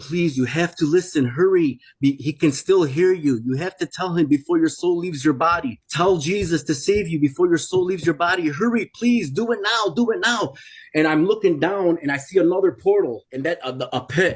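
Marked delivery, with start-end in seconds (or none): 0.0-10.6 imploring, desperate, begging tone. Retelling what an angel's voice said to him: imitating a desperate begging angel. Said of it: "It was begging me".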